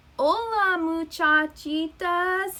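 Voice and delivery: high, gentle, tender mooey-mooey voice. Reading a story aloud, narrator voices the returning character's greeting: soft 'mooey mooey' voice. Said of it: "he said in a mooey mooey soft voice".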